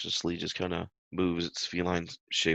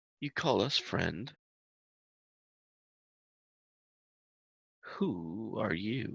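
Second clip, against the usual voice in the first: uncanny, eerie animal voice, slow; 3 semitones higher, 5 dB quieter than usual. Voicing a cat familiar answering a greeting: eerie voice. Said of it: "this eerie voice".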